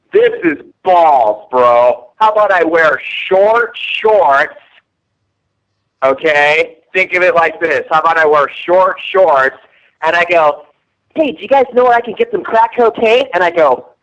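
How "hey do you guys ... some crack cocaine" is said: showy, flamboyant put-on character voice, high. Pitching a put-on role to the others: flamboyant guy voice.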